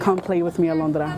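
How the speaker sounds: ordinary talk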